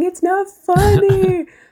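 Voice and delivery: very high, mock-crying, tearful little-girl wail. Retelling what a little girl said while crying: imitating a crying little girl. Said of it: "the other little girl started crying and saying".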